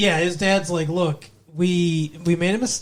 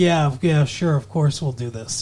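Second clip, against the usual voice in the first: mock calm, condescending tone; 3 semitones lower than usual. Retelling how a character answers an eager girl: imitating a calm, condescending tone. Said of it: "he's talking to her like she's the little, like, like, yappy puppy".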